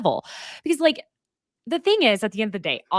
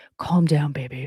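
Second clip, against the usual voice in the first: put-on creepy, soothing whisper, lower; 9 semitones lower than usual. Retelling how one man calmed another, mouth in his ear: imitating Whitney's creepy whisper in an ear. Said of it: "his mouth in Austin's ear being like".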